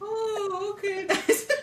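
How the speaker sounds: mock, very high, choked-back laugh. Retelling relatives greeting a new in-law: imitating someone stifling laughter. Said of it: "they're trying so hard not to laugh".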